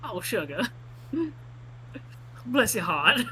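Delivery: put-on southern US accent. Hearing that someone is twenty-one, answer them in a southern accent. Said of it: "was said with a southern accent".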